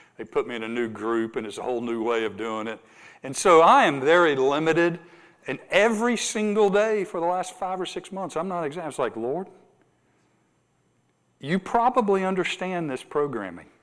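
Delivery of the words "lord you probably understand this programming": dry, sarcastic, tongue-in-cheek tone with swooping pitch. Struggling in a new group, quoting their daily remark to the Lord: retelling a sarcastic prayer. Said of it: "I'm being sarcastic".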